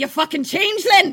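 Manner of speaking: put-on Irish scolding voice, shrill, very high, very loud. Imitating Irish parents scolding a misbehaving kid: imitating an Irish parent scolding. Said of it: "Irish parents who are constantly... just being like".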